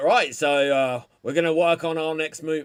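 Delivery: put-on slight, light Australian accent with a lilt. Retelling a video of Peter Jackson announcing a new movie: Peter Jackson impression, a bit Australian. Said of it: "make him a bit Australian".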